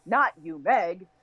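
you unstressed, stress on not and Meg. Marking stressed, unstressed, stressed syllables in a phrase: stress on not and Meg. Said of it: "stressed, unstressed, stressed".

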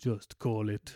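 deep, menacing, cartoon-villain Spanish accent. Imagining a casting choice for Bane, line in deep scary Spanish accent. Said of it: "really deep Spanish, scary accent".

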